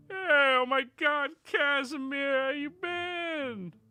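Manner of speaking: weird horse voice, high-pitched and loud. Voicing a Pegasus shouting down from the air: weird-ass horse voice. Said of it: "apparently Seabass has that weird-ass voice".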